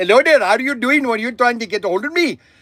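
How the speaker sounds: put-on Indian accent. Telling how they answer telemarketers on the phone, in an Indian accent. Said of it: "I always have my Indian accent".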